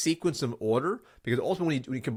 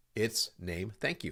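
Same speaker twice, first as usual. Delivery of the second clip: firm falling pitch on every "thank you"; 6 semitones lower, 10 dB quieter than usual. Demonstrating how to answer a gatekeeper's question with just a name: firm, downward-inflecting. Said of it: "It's downward inflecting".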